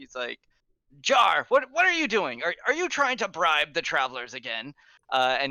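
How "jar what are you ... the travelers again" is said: yelling, higher and faster. Game master voices a just-woken guard yelling at Jar about bribing travelers. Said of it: "you see him yelling".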